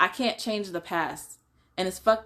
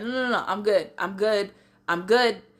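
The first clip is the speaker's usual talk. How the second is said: hyperventilating, gasping for air between words, breathless, panicked; 2 semitones higher than usual. Retelling refusing help from a sister: imitating hyperventilating. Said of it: "I'm still hyperventilating".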